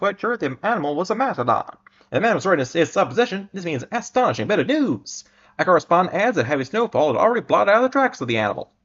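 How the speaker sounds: put-on old radio announcer voice. Reading an eighteen-nineties news item aloud: old-timey radio voice. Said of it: "talking in the radio voice because it's the eighteen nineties".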